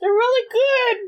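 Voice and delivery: very high-pitched speech, chewing, with a full mouth. Eating caramel snacks while recording a podcast, answering a co-host, mouth full, chewing. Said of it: "I just stuffed some milk duds into my mouth".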